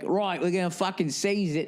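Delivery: fake, sort-of, badly put-on English accent. Acting out the government's reply to an owner: bad english accent. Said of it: "my bad sort of fucking English accent".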